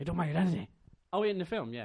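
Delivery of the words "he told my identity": put-on Irish accent, higher and louder. Doing an impression of a film character, recalled from the film: Liam Neeson impression. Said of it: "Is he Irish?".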